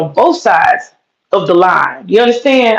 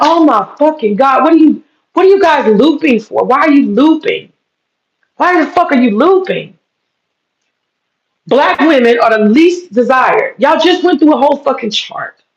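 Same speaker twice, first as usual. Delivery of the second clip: loud, worked-up, high-pitched yelling rant; 6 semitones higher than usual. Speaker reacting to what a man said about dating, yelling. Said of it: "I'm yelling again".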